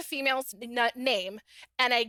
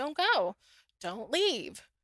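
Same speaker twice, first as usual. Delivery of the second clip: put-on robotic voice, pleading. Retelling how the boyfriend begged her not to leave: imitating a robotic plea. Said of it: "he says it very robotically".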